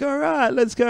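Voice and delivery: play-acted, very high-pitched, hyped-up emcee shout. Describing a youth worship leader shouting at the crowd, mock hype shouting. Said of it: "he's like shouting at the crowd".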